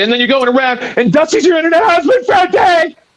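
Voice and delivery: very high-pitched, rising voice like a woman's. Retelling what another debater said, imitating a high-pitched womanly voice. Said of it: "his voice gets all high pitched like a woman".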